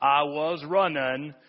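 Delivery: drawled Southern way. Telling how a boy in leg braces takes off from bullies, quote him imitating Forrest's accent. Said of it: "in Forrest's, you know, accent".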